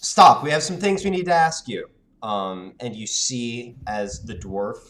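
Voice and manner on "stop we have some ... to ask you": very high-pitched, very loud, commanding shout. Voicing a character who calls out to a dwarf, commanding shout. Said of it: "shout in a commanding voice".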